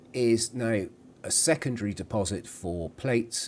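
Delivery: ordinary delivery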